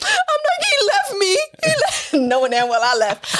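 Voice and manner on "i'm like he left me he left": acted-out very high wail through tears, sobbing. Retelling a phone call from an Uber, retelling crying on the phone. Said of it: "And I'm crying".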